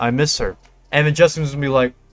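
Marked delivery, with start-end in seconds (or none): 0.0-0.6 put-on, lower whisper. Imagining what one fighter says to another between rounds: imitating Ilia Topuria whispering. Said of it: "Ilya's gonna whisper".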